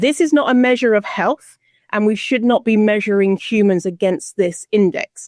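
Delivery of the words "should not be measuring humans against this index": ordinary talk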